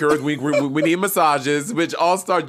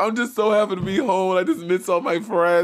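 mock sobbing, crying through the words; 4 semitones higher than usual. Retelling how Bob came home and broke down, imitating Bob sobbing. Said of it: "just sobbing".

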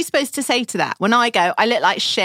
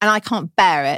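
ordinary delivery

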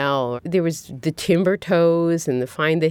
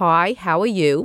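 Brooklyn way of talking. Showing how she talks on the phone with her cousin, in a Brooklyn accent. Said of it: "Suddenly you're talking like this".

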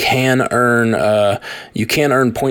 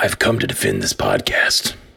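very low, rough caped-hero voice; 4 dB quieter than usual. In a podcast skit, answering Bane's question, Batman voice. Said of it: "Batman, why have you come?".

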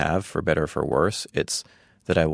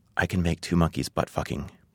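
put-on whispering. Retelling what the balloon animal girl whispered into an ear: imitating a whisper. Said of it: "she whispers into my ear".

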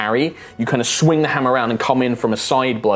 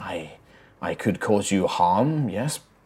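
soft, slow, faint ghostly spirit voice. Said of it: "they say, like".

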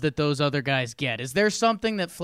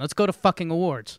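ordinary talk

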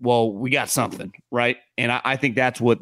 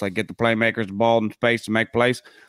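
mocking put-on Southern accent. Talking football offense, mocking a common saying in a southern voice. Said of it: "make fun of it in our southern voice".

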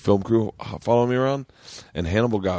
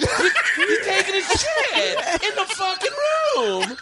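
put-on livid rant, higher pitch. Retelling a livid reaction in the van: imitating Sebastian, livid. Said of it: "I'm doing Sebastian right now".

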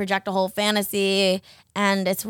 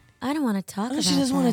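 put-on sexy, sultry voice, pitched higher; 5 semitones higher than usual. Repeating a line when asked to say it porny: put-on sexy porny voice. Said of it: "Say it all porny again".

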